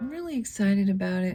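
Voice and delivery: acted, calm, mellow, low-key, unexcited delivery. Speaker imitates how they said a line in their own video, mock-mellow delivery. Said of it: "I said it in such a like mellow way".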